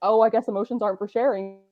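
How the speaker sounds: normal talking voice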